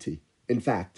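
plain reading voice

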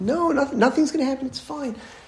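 put-on very high, increasingly agitated insistence. Retelling a woman reassuring a man who keeps screaming: imitating an agitated woman. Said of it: "she starts to get a little bit more like agitated".

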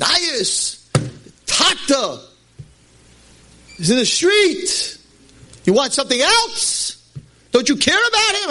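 play-acted very high, shrieking, screaming voice. Retelling someone's yearly rebuke about a father in the street: imitating someone screaming. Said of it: "He's screaming at me".

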